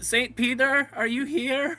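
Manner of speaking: nervous voice. Voicing his character as he approaches in the scene: nervous. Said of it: "he very nervously is like".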